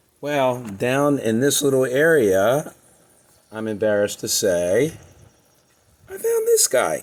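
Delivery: hoarse, croaky, roughened voice. Talking to viewers while suffering a cold from the grandkids, croaky voice. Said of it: "Excuse my croaky voice".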